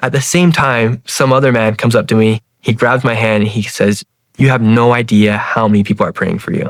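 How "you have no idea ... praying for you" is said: meek, humble, modest tone. Retelling a man at a gas station who grabs his hand; imitating very quiet speech. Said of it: "he says it super silent, like very quietly".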